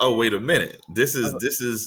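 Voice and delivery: ordinary talk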